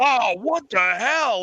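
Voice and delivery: put-on angry voice. Pitching a movie scene, voicing a character splashed with gross water: acting out an angry character. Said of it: "and he's all mad".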